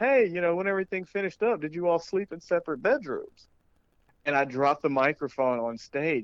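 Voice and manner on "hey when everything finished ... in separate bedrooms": shout, much higher pitched and faster. A comedian retells an audience member calling out a question, retelling a yell from the crowd. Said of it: "he yells out of the crowd".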